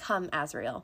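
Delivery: really quiet, hushed, understated. Retelling a book scene where a character calms another: Feyre speaking really quietly. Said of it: "really quietly".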